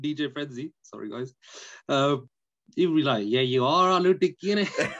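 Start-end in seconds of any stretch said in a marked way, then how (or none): 3.3-4.9 loud, high-pitched voice in banter style. Imagining what Simon would say if sitting here: imitating Simon's voice. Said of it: "Just hear his voice right now".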